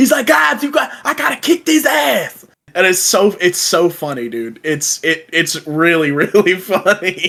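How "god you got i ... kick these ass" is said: high, rough voice lisping the s sounds. Describing an actor's role in Kingsman to a friend, Samuel L. Jackson with a lisp. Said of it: "Jackson with a lisp".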